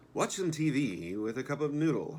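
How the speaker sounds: very loud, high, announcer-style TV narrator voice. Doing a read-through of a passage, in a TV narrator voice. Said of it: "in my best T V narrator voice".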